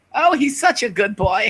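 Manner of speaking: put-on very high old woman voice.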